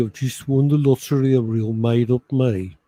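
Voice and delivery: put-on cheery Birmingham accent. Trying again after being told the accent wasn't Birmingham, cheery Birmingham accent. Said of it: "they always sound so cheery".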